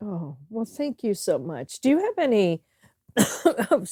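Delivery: tearful, choked up, voice catching, wavering pitch. Thanking a friend for kind words about their friendship, crying and choked up. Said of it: "I am crying".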